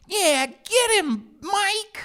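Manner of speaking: shrill, very high, nerdy cheering voice. Imitating the nerdy buddy who cheered on the jock bully, in a bully's sidekick voice. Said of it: "there'd always be like a buddy that would be like".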